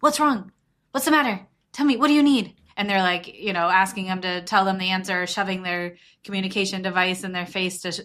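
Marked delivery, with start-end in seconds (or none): 0.0-2.5 forceful, strong-toned half-yell, pitched up. Describing a parent with a melting-down child, imitating a parent half-yelling. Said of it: "with a very strong tone of voice, like kind of yelling".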